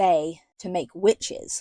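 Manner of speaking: ordinary delivery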